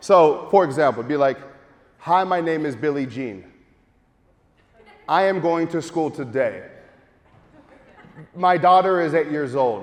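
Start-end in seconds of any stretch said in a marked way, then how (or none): 2.0-9.8 clear pause between each sentence. Showing how to deliver a script: pausing between each sentence. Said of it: "Notice the pause".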